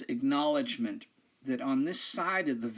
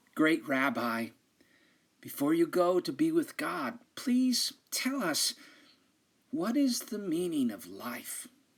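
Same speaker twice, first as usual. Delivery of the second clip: reverent, humble, devoted tone; 3 semitones higher than usual. Telling a story, the wisest student asks the rabbi a question; soft, reverent voice. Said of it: "in a soft, reverent voice asks".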